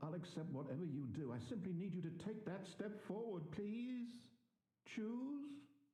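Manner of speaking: sorrowful, very high-pitched voice. Begging a player to take a step forward: sad. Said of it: "He sounds so sad".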